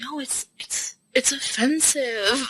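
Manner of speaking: put-on mutter. Retelling a guy's answer when pressed to explain a joke, mock-muttering under breath. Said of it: "under his breath".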